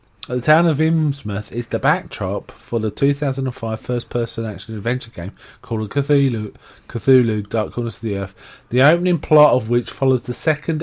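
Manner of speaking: ordinary talk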